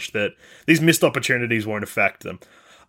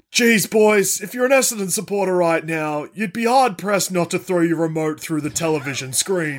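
put-on exasperated dad voice, higher; 6 semitones higher than usual. Retelling a commentator's halftime remark: Jonathan Brown impression. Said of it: "the best Jonathan Brown impression".

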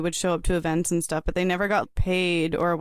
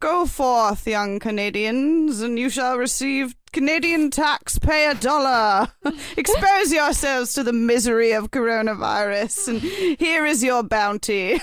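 put-on English accent, high and slow; 6 semitones higher than usual. Picturing a leader on a throne announcing a program: Justin Trudeau with English accent. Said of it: "Justin Trudeau should just have an English accent".

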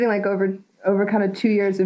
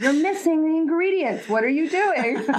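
mock-bossy put-on voice, higher and faster; 8 semitones higher than usual. Recalling how Lisa corrects her cooking, imitating Lisa being bossy. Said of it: "She's very, very bossy".

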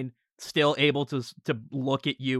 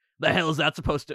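monster voice like an orc; 3 semitones higher, 3 dB louder than usual. Voicing an orc with a shard in its chest: voicing an orc. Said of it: "one of the orcs ... he's like".

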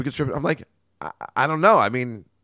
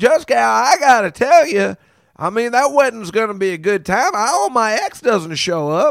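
put-on raised, high-pitched Southern Alabama accent with country talk; 8 semitones higher, 6 dB louder than usual. Recalling a group of guys, showing how Dave talks: imitating Dave's Alabama accent. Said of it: "talks like this because he he's from Alabama".

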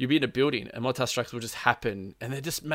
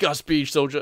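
put-on Russian accent, higher and louder; 3 semitones higher, 7 dB louder than usual. Retelling what a man said after getting him up, in a put-on Russian accent. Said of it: "speaking in a Russian accent".

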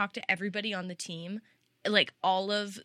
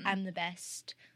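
put-on outwardly confident voice, quieter; 5 dB quieter than usual. Describing how a driver comes across: imitating Lando sounding outwardly confident. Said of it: "outwardly confident".

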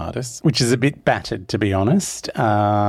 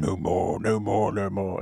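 mocking put-on voice, quieter and slower; 6 dB quieter than usual. Recounting a scene where she imitates him, retelling a mocking impression. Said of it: "It's quite mocking".

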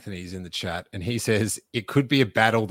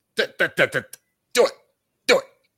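very slow, drawn-out, pitched-up urging voice; 8 semitones higher, 5 dB louder than usual. Host wrapping up the episode, urging listeners to obey the algorithm, in Star Wars impression. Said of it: "that was probably my best Star Wars impression".

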